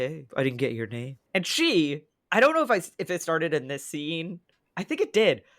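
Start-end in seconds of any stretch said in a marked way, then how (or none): 0.0-1.2 sultry, inviting, deep gravelly rasp, laid on thick. Retelling how Drake asks for Catherine's name: come-hither deep gravelly Drake voice. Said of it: "in a very come hither sorta deep, gravelly voice".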